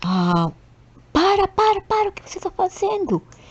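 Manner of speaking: very high, frantic, panicked, swooping hysterical cry. Telling of a panicked mother on a bus, imitating a hysterical scream. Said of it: "ficou histérica, começou a gritar".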